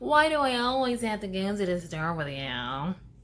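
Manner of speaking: complaining, whiny tone. Showing ways to tell Dad you'd rather not go, in a whiny tone. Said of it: "In a whiny tone".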